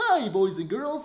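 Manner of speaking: voice pitched way up high. Doing a last impression, the voice most proud of: Barney the Dinosaur voice. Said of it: "Barney the Dinosaur".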